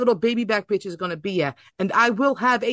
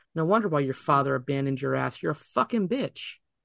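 plain

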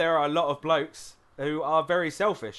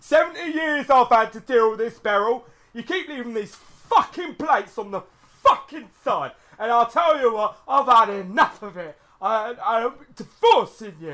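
put-on very angry, loud, pitched-up old-man rant; 8 semitones higher, 7 dB louder than usual. Acting out an old man scolding his wife over plates, mock super pissed-off old man. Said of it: "an old man would be like super pissed off about".

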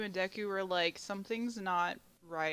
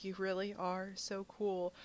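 put-on muttering, quieter; 6 dB quieter than usual. Retelling a scene to another speaker, imitating Shigaraki muttering to himself. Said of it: "he mutters to himself, and he's like".

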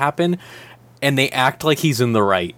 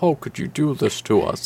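put-on mournful, pleading, sad old man voice. Mocking a character he finds obnoxious, mock sad old man voice. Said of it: "He always just sounds like a sad old man".

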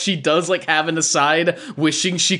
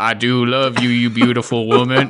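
put-on deep, heavily laid-on Texas drawl; 5 semitones lower than usual. Imitating audiobook narrators voicing Quincy Morris: imitating a deep Texas accent. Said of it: "they'll just drop their voice two octaves and do the fucking Texas accent".

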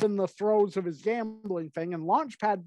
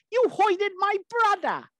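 very high, bouncy, swooping cartoon voice; 12 semitones higher, 4 dB louder than usual. Discussing a comic, voicing the club guy: Tiny Toons-esque voice. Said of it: "I imagine to have like a Tiny Toons-esque voice".

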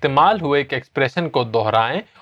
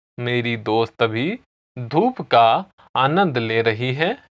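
plain

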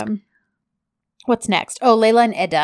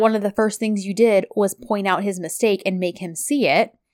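ordinary delivery

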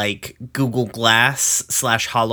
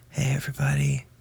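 soft, quiet, hushed voice; 6 dB quieter than usual. Trying out a quiet podcast intro as a joke: quiet ASMR-style intro. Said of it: "What if I did a quiet intro".

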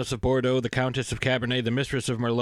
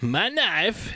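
high, put-on goofy comic voice; 7 semitones higher than usual. Describing a meme where a dying horror villain speaks, in a Borat voice. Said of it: "in a Borat voice".

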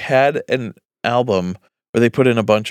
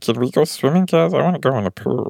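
childlike little cartoon kid voice; 4 semitones higher than usual. Several speakers taking turns at the cartoon voice: Meatwad voice. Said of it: "you're doing it way better than I have".

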